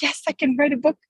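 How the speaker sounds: put-on thrilled, excited, eager voice. Retelling her first thought about writing a book: imitating own past excitement. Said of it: "excited in the beginning".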